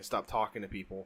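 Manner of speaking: ordinary talk, nothing marked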